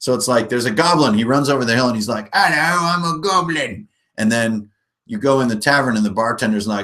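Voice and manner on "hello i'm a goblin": put-on Cockney accent, very slow and high. Describing a fantasy game, speaker voices a goblin running over the hill, Cockney accent. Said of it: "this Cockney accent".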